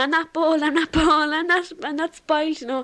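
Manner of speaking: acted screaming while crying. Remembering being hurt by a comment about adopted children: retelling a tearful scream. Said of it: "I ran around the house screaming".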